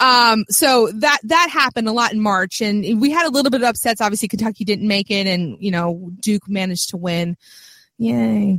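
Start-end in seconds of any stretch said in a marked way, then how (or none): 8.0-8.6 sarcastic, unenthusiastic mock cheer on 'yay'. Reacting to a rival team winning: sarcastic unenthusiastic yay. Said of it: "You can tell how excited I am".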